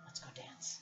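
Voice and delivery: close, breathy, soft whisper. Voicing a character who asks a player to dance: whispering. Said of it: "she whispers in your ear".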